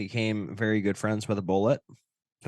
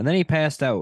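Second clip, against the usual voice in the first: ordinary talk, nothing marked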